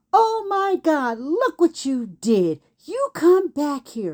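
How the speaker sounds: put-on upset, yelling, scolding voice. Retelling how a woman shouted after the speaker: imitating a neighbor yelling. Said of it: "She's yelling at me".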